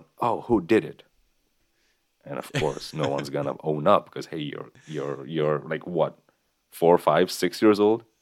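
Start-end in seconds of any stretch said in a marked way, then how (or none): 0.2-1.0 high-pitched, loud calling-out voice. Retelling how the class teacher yelled out to the class, retelling a teacher yelling. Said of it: "our class teacher yells out".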